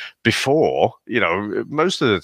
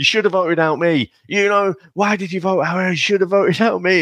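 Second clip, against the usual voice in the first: high, mardy, whingeing, sulky whine; 12 semitones higher than usual. Recapping a reality show, the speaker imitates a contestant: mock sulky whine. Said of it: "he's being a real fucking mardass with it".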